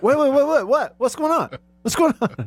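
startled, alarmed, very high confused outburst. Retelling a co-worker's reaction to a yell: imitating Ben's alarm. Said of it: "And Ben was like".

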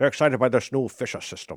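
put-on Scottish voice. Continuing the bit about the new stereo system: Sean Connery voice, Scottish. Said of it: "sorry, he's Scottish".

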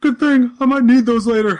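squeaky, very high, loud put-on voice. Retelling what the big guy said after dropping condoms: imitating the big guy's voice. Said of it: "this is the voice".

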